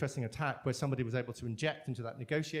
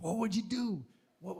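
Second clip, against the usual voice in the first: bad put-on American accent, pitched up; 6 semitones higher than usual. Quoting a time travel film's dramatic last line: bad Marty McFly American accent. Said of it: "that's a really bad accent".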